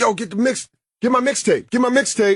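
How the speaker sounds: mock street-hustler shouting, high and calling out. Retelling someone yelling at them as they walked by: imitating someone yelling. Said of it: "he's yelling at us when we're walking by".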